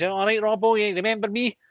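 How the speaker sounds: high, reedy, really nasally voice. Retelling a former coworker greeting a footballer: imitating a nasal voice. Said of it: "had one of these really nasally voices".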